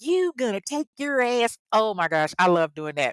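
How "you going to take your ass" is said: put-on, pitched-up little country twang. Showing listeners the country voice done on the show: country twang. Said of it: "my little country twang".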